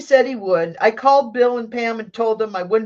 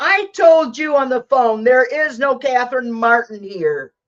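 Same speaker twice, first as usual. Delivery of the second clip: testy, dismissive, snippy, curt tone; 2 semitones higher than usual. Retelling what the woman at the hospital said: imitating a snippy tone. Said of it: "was the snippy tone".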